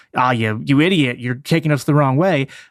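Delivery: ordinary delivery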